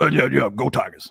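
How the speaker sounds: big, open-mouthed, puppet-like coach voice. Imitating a football coach ending an interview: Ed Orgeron voice. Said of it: "one of my favorite voices in sports ever".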